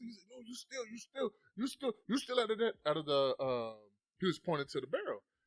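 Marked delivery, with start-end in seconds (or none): 0.3-3.4 put-on yelling, higher. Retelling a shopkeeper accusing them of stealing: imitating a shopkeeper yelling. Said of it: "he's yelling at us".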